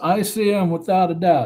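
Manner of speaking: ordinary delivery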